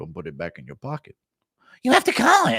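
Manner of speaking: low voice, pitch swooping and swinging around. Reading out a two-dollar message, the speaker does an Ariel impression. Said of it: "Impression of Ariel telling you to call it".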